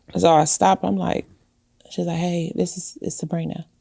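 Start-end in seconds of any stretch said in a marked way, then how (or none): 2.2-3.7 put-on whisper, quieter. Retelling a phone call from Sabrina, imitating someone whispering. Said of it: "she was, like, whispering".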